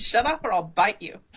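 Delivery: ordinary delivery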